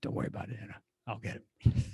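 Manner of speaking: hushed, breathy whispered superhero voice. Acting out what a character would say in this situation, in a Batman voice. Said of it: "you went into your Batman voice".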